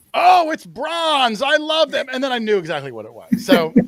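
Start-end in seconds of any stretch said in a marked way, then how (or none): 0.1-2.0 mock very high, slow, drawn-out shouted yell. Speaker retells what another person yelled out, ruining the answer: retelling a yell. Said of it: "Doug yelled out".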